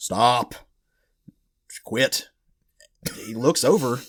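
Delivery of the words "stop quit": light, put-on big voice. Telling a story where a character suddenly hears a voice call out, booming voice. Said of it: "he hears this booming voice".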